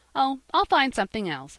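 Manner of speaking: cheery, upbeat voice. Jappy answers Polly, who asked what his gift will be, cheerful.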